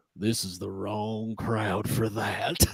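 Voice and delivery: very low, slow mutter under the breath. Retelling what the guy next to us said: imitating muttering under breath. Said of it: "under his breath".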